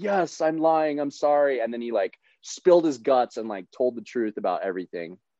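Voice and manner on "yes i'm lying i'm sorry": mock sobbing, high, slow, broken-down bawling. Retelling a detainee's confession during an interrogation: imitating someone bawling. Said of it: "the guy started bawling".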